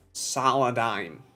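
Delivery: 'Saladime' said in a put-on California girl accent. Quoting how a brand sheet pronounces a company name: put-on california girl accent. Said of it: "in the most California girl kind of way".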